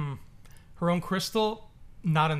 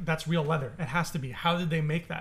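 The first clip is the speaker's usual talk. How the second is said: ordinary delivery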